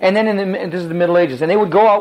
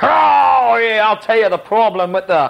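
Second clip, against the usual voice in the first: put-on English accent with drawn-out "oh"; 3 semitones higher than usual. Speaker voices an unemployed man in the city of Rome, in an English accent. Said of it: "Why am I talking like an Englishman?".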